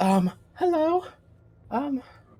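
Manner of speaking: very high-pitched gnome voice. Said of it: "I can't do that voice".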